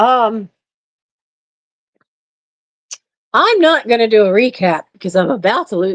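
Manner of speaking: cracking voice, breaking up and giving out. Skipping the usual recap at the end of a talk: voice starting to crack. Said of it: "My voice is starting to crack".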